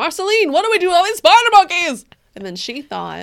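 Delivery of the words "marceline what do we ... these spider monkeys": very high-pitched, very loud, belted questioning tone. Acting out a quoted line addressed to Marceline: Jerry Seinfeld voice. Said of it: "that was a very Jerry Seinfeld voice".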